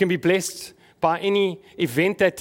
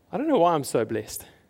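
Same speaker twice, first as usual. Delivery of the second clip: lofty, smug, self-satisfied, arrogant boasting tone. Retelling what a friend said on the phone: imitating a friend's arrogant tone. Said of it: "almost, like, arrogantly".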